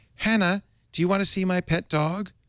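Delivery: very high-pitched put-on voice. Role-playing the Chinese speaker's part in a dialogue, put-on high voice. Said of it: "I'll do her in a high voice".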